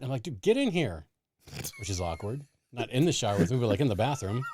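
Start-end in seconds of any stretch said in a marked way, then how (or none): 0.2-1.1 put-on yelling, raised and pitched up. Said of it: "I'm yelling for my son".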